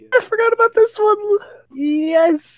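high, excited squeal.

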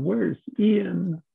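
high, weeping, pleading cry. Retelling a cry on stage under hypnosis, asking for a son: reenacting own crying. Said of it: "I'm crying on stage going".

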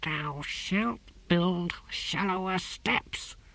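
high voice hissing through the words. A narrator reads a tortoise hauling himself up steps, hissing. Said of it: "he hissed".

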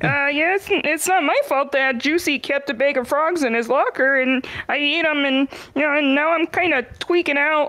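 frog voice throughout. A girl who turned into a frog answers her friend, frog voice. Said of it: "do you have to talk like that?".

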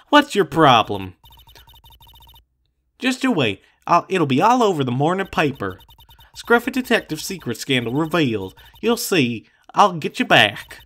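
put-on southern-accented character voice. Kept out by a cop during an investigation, Lotta answers back, Lotta's southern accent. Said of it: "That southern accent can only mean".

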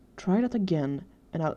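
ordinary talk

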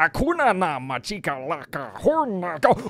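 made-up alien-creature gibberish babble. Stretching facial muscles sideways and talking gibberish, in a Star Wars alien voice. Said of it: "I sound like a Star Wars".

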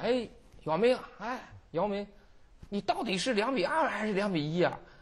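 spoken in Shanghainese dialect. Retelling what people at the next table said to a very tall man, in Shanghainese dialect. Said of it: "用上海话".

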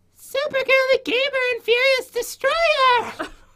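very high, odd, weird motherly voice. Starting the game's story mode and announcing the players, weird put-on voice. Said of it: "that's a weird voice you have".

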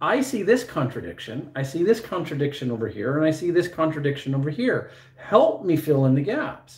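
plain

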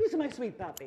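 doting, affectionate sweet-talking voice. Speaker admitting she talks to her dog the same way, imitating own sweet talk to a dog. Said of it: "And I do it too".

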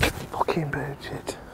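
slow, whispered curse under the breath.

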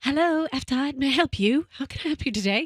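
put-on British-accented speech. Playing a receptionist answering a ringing phone in a bit, British accent. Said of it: "Why does she have a freaking British accent?".

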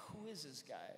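normal talking voice

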